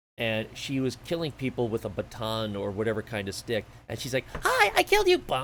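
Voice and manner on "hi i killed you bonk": silly, squeaky, goofy cutesy voice, very high-pitched. Quoting a woman taunting players she kills in a game, goofy, silly voice. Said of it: "goofy, silly voice".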